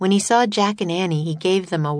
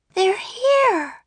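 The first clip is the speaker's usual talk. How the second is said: loud whisper, much higher. Climbing into the treehouse ahead of Jack, she answers him in a loud whisper. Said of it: "said Annie in a loud whisper".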